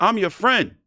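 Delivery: play-acted very high, loud snapping voice. Retelling a press conference reply to a tough question: imitating Jermall Charlo snapping. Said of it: "he gonna have the nerve to snap on me".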